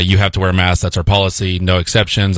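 ordinary delivery

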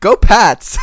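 loud, cheering cartoon rabbit voice. Continuing the Mark Wahlberg bit: sounds like Roger Rabbit. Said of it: "That definitely sounds like Roger Rabbit".

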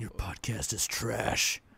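slow, hushed whisper right at the ear. Voicing the cat whispering in one's ear: whispering as Smokey the cat. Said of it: "whispers in your ear".

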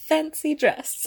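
imitated, put-on English accent. Mimicking how the other speaker says a phrase: mock English accent. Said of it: "that's offensive because I don't have an English accent".

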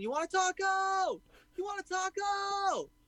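put-on belligerent drunk scream, very high, drawn out. Retelling a drunk man screaming at sleeping bandmates: imitating a drunk screaming. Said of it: "he's screaming".

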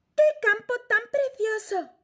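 very high, delighted, enthusiastic exclaiming. A narrator reads a character hopping from stone to stone, enthusiastic exclamation. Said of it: "exclamó Anica entusiasmada".

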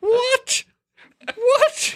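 very high, laughing, stunned disbelief. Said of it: "I was like".

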